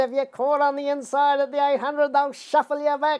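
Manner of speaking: very high, screechy, screeching voice. Retelling Tommy Smith grabbing and shaking you with Melbourne Cup instructions, in Tommy Smith's high screeching voice. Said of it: "he's a bit of a high screeching voice".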